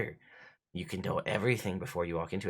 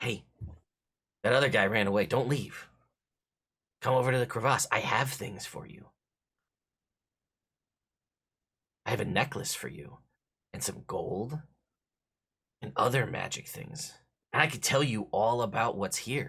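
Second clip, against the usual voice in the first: tempting, persuasive, coaxing voice; 3 semitones higher than usual. The game master voices a creature calling from the dark to a player's character: telepathic voice in your head. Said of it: "you see like open one singular lidded green eyeball kind of glowing from the dark. / I know all this because I used to be a wizard. Really? Yeah. I got greedy though. And now I'm this. / It's all ment".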